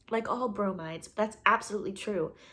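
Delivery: ordinary delivery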